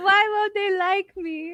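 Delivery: slow, high, whining mock sob.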